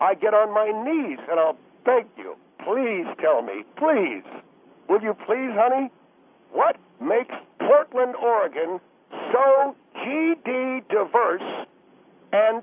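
high, imploring, begging pleading voice. Pleading with the other person to answer a question asked many times, begging. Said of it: "I'm pleading with you".

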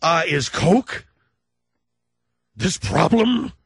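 loud, slow, worked-up voice. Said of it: "I'm sounding like I'm worked up".

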